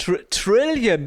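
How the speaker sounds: mock announcer voice, "trillion" stretched out slow.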